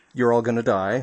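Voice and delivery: normal talking voice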